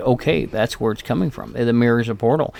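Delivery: ordinary delivery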